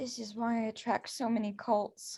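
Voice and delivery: hushed, private whispered aside. Before questioning someone about cults, the speaker is whispering to self. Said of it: "I'm gonna just kind of whisper to myself".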